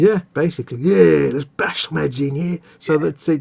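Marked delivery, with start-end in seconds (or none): 0.8-2.6 put-on Cockney football hooligan wide-boy orc voice. Describing how orcs talk, demonstrating a Cockney football hooligan orc voice. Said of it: "like London wide boy football hooligan types".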